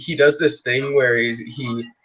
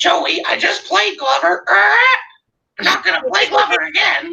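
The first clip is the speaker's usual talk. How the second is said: mocking, very high-pitched, dragged-out voice. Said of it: "And then he goes".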